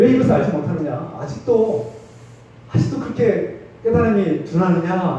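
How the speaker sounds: frustrated scolding tone.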